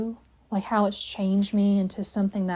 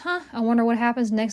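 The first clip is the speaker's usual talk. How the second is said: play-acted casual, unbothered, shrug-it-off musing; 3 semitones higher than usual. Retelling how they felt leaving school: imitating own idle wondering. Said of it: "I just had this ... attitude".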